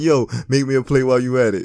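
put-on jovial, joking man's voice. Retelling how a man asked a guest for a plate: jovial, laughing imitation of Shake. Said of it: "said it in a very jovial fashion".

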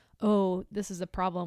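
ordinary delivery

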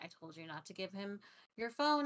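normal talking voice

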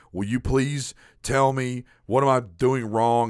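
acted-out earnest, slow, pleading beg. Retelling a past plea to a friend for help: imitating himself begging. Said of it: "begging her friend".

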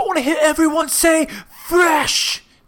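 loud, high-pitched shouting. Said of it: "He's like".

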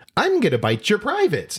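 put-on very high, fast kid's puppet voice. Retelling a young girl making her animal puppet talk to other kids: kid's puppet voice. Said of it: "in her puppet voice say".

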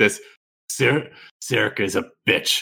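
slow, drawn-out, draconic dragon-like tone. Narrating a scene where Cosmo charges at Sirik, Cosmo's draconic tone. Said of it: "Cosmo does a draconic tone".

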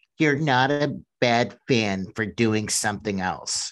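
corny, dorky, really lame read-aloud delivery. Speaker reads aloud what a writer wrote, in a really lame voice. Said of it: "I'm going to read it in like a really lame voice too".

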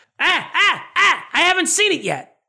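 acted screamed line. Recapping a TV scene, acting out a character's line: retelling a scream. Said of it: "And Frank screams".

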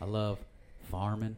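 put-on country twang. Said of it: "he's got a little bit of a twang".

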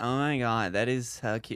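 slow, creaky, fried vocal fry. Showing the others the way of talking they want the name for: vocal fry. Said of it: "make your voice sound like".

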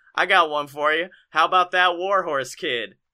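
usual speaking voice

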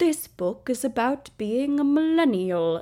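dry British male narrator voice. Describing a typical book trailer narrator, in a dry British man's voice. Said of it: "a dry British man's voice just being like".

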